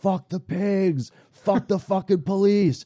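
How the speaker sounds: mock very high, shrill, top-of-the-lungs screaming. Recounting a video of a handcuffed friend yelling at police: retelling a friend's yelling. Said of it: "he's yelling at the top of his".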